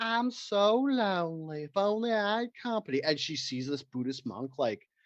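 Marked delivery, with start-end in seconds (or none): 0.0-3.0 lonely-sounding, high, drawn-out Southern belle voice. Pitching a scene, voicing a lonely southern belle housewife: southern belle voice. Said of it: "A Southern Belle".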